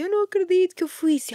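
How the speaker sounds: crying hard through the words, high and tearful. Retelling a client's reaction after a reiki session: imitating someone crying. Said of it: "E ela começa a chorar, mas a chorar, assim".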